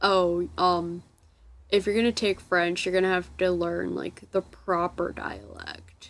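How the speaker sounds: plain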